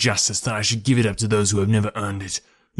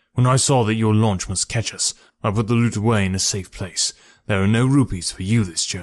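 plain

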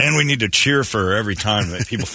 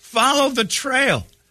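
play-acted, very high-pitched screaming. Telling how friends guided a scared man along a trail, imitating them screaming. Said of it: "who were just screaming".

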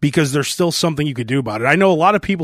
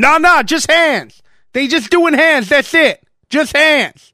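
shrill, high, loud, offended and indignant; 12 semitones higher, 5 dB louder than usual. Describing a guy who objects to anything but punches, imitating him getting mad. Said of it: "he instantly gets mad".

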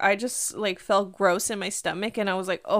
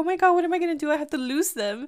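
imitated panicked speech, higher pitch; 7 semitones higher than usual. Retelling what the driver said after losing the car behind: imitating a panicked driver. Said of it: "I panicked".

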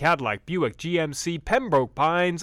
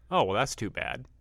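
sly, snarky, needling tone; 4 semitones lower, 5 dB quieter than usual. Retelling a remark made where a Red Sox fan friend could hear: imitating own snarky remark. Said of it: "it was done snarkily".

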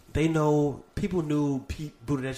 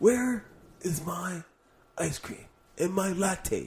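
drowsy, sleepy, high swooping voice; 6 semitones higher than usual. Not liking to yell, she does her bit of Bernie asleep: imitating Bernie asleep. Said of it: "I'm doing my Bernie when he's asleep".

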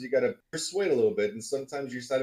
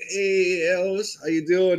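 slow, drawn-out, unhurried, pitched-up "hello"; 7 semitones higher, 7 dB louder than usual. Retelling a friend's afternoon phone greeting: Jerry Truman voice. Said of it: "in a whole Jerry Truman voice".

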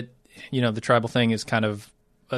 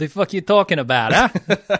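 put-on New York accent, slow; 6 semitones higher, 4 dB louder than usual. Joking with a co-host who asked for an accent: put-on New York accent. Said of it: "That's just New York".

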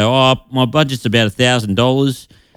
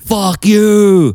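screamed, very high-pitched, shrieking yell; 10 semitones higher, 4 dB louder than usual. Describing a comedy sketch where a man yells at the speaker's house, acting out a yell. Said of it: "he starts yelling at my house like".

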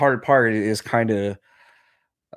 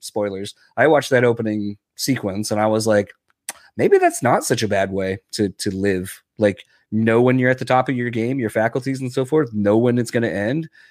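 plain

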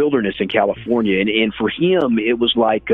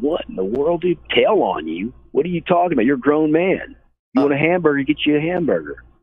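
high-pitched, baffled, incredulous, can't-believe-it tone; 5 semitones higher than usual. Retelling own answer to a friend's request: imitating own incredulous reply.

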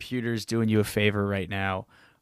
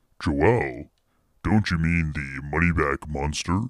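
put-on spooky voice, much lower pitch; 7 semitones lower than usual. In a podcast sketch, the Money-Back Monster answers Joel in a spooky voice. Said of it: "trying to do something spooky here".

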